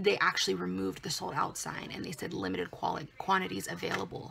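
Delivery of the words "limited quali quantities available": plain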